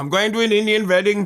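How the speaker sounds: put-on Indian accent, wedding pronounced vetting. Speaker showing an accent they find easy to do: Indian accent. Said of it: "one of the easiest ones for me to do is the Indian accent".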